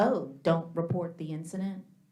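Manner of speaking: ordinary delivery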